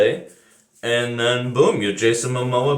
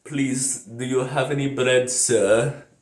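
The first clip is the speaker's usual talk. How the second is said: poor, unconvincing put-on Russian accent; 3 dB quieter than usual. Speaker chatting casually, pretending to be a little russian lady: bad russian accent. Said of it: "I'm a little Russian lady".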